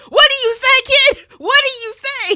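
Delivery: shrill, very loud, high-pitched demanding yell. Retelling how a character yells at a kid: imitating someone yelling. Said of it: "He starts yelling at the kids".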